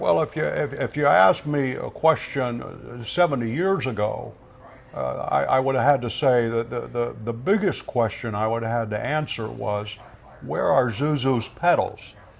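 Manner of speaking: stumbling and repeating words. Showing how an interview answer would sound: Jimmy Stewart voice. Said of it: "as Jimmy Stewart doing an interview with you".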